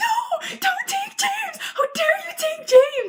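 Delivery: very high, shrill, distressed screaming shriek. Retelling their reaction when a character in a book was taken, retelling their own screaming. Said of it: "I was literally like screaming".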